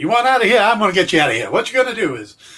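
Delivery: put-on sliding into a high Northern Atlantic accent. Interrogating a kid, the cop offers him a deal: Mephisto with Northern Atlantic accent. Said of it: "why Mephisto would have a Northern Atlantic accent".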